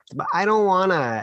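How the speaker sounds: put-on high, whining little-kid voice. Describing a common kid response to serving opportunities, imitating a whiny kid. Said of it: "maybe I didn't do them justice there with that whiny voice".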